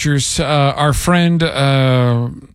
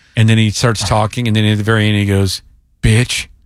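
ordinary talk

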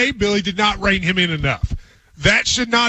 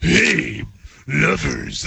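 put-on leering, low, creaky, creepy old-man voice; 4 semitones lower than usual. Mocking an ad read by another speaker: creepy dirty old man voice. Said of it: "looking through your window across the street".

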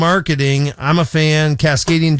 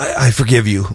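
mock reluctant tone, lower pitch; 4 semitones lower than usual. Imagining someone forgiving another under pressure: imitating a reluctant forgiveness. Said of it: "But reluctantly".

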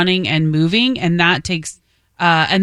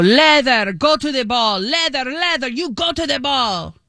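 put-on Peruvian accent; 7 semitones higher than usual. Recalling an old coach from Peru, imitating him in a thick Peruvian accent. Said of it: "he had a very thick accent. He was from Peru".

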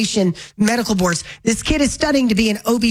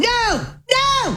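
very high, shrill, repeated shouting; 13 semitones higher than usual. Recalling an automated order system asking extra questions, retelling shouting no. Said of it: "I'm just shouting".

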